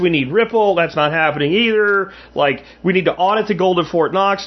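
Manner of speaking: plain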